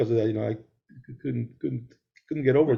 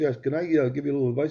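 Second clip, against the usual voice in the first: ordinary delivery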